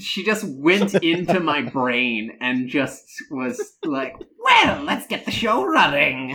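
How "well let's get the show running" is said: high, swooping cartoon villain voice. Trying to voice the cyber witch, the speaker slips into another voice: Skeletor voice. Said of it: "That's Skeletor".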